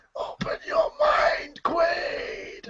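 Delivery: hushed, breathy whispered delivery. Talking about a film, a participant offers an impression of a line from it. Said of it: "Here's my impression of it".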